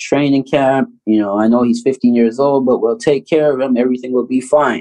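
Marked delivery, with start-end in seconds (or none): none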